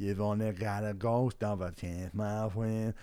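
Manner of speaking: put-on slurred, mumbling delivery. Speaker mimicking a terrible performer slurring into the mic, imitating slurred mumbling. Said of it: "he's just like slurring".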